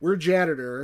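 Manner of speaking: plain reading voice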